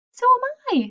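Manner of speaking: small voice. Narrating as a second small voice answers Wilbur from above: tiny voice. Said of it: "said another tiny voice".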